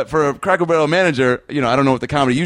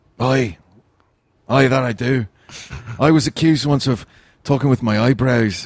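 put-on Irish accent; 3 semitones lower than usual. Someone asks whether you do the impression; answer in a Colin Farrell impression. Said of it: "you do a Colin Farrell impression?".

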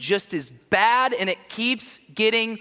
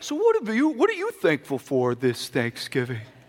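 put-on old man voice, much lower; 5 semitones lower than usual. Acting out a grandpa asking everyone at Thanksgiving dinner, in a grandpa impression. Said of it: "That's my grandpa impression".

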